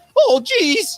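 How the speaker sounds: very high-pitched, loud, crackling voice. Showing the crackling that Shaggy does: crackling Shaggy voice. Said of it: "that crackling that Shaggy does".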